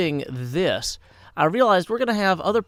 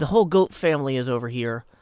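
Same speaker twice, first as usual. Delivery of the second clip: plain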